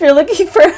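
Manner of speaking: speaking through laughter. Starting an intro line to another speaker, laughing while talking. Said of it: "finish your laughter first".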